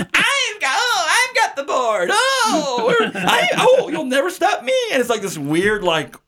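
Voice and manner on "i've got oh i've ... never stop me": high-pitched villain voice ranting. Retelling a movie villain stealing the board: Rita Repulsa villain rant. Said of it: "it's like a episode of Power Rangers with Rita Repulsa".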